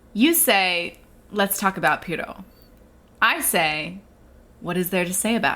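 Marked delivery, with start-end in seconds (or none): none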